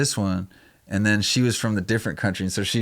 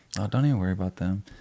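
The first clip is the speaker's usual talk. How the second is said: mock dead-serious, put-on serious tone; 3 dB quieter than usual. Retelling the nurse's reply to the speaker, mock dead-serious tone. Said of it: "dead serious".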